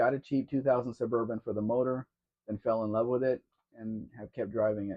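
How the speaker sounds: ordinary talk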